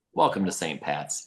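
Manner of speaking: calmest possible tone, low. During a huge fight, the coach turns to the speaker; imitating Coach Bailey's calm tone. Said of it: "in the calmest tone whatsoever".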